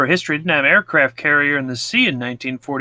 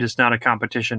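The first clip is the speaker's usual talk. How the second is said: usual speaking voice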